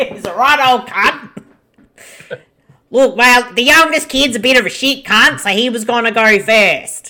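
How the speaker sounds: put-on broad Australian accent, laid on thick. Voicing a character in an Australian film on the show, in a put-on Aussie accent. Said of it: "doing our Aussie accent".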